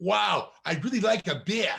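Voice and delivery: put-on very thick, laid-on-heavy New York accent. Retelling what a woman hanging out with a group of guys said, in a thick New York accent. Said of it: "in this very thick New York accent".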